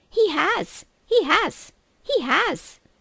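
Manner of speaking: very high, very slow, loud squeaky squirrel voice. Narrating a story as a young squirrel loses its head at the table: squeaky squirrel voice. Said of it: "it squeaked".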